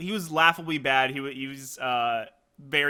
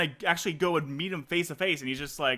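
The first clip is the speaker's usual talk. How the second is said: plain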